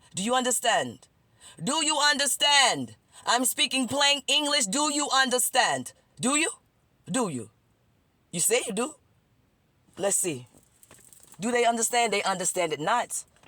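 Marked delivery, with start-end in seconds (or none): 0.1-7.5 insistent, hammering delivery, pressed hard, pitched high. Asking the listeners again and again whether they understand: yelling. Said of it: "Is it because I'm yelling?".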